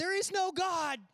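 put-on very high, loud shout. Recounting a worship leader's vocal cue gone wrong, retelling a shout. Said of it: "And he shouted".

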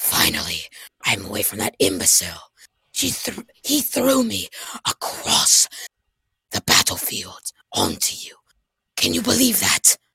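put-on British accent. A player voicing Ragnar to another character mid-battle, in a British accent. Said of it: "I just gave a British accent".

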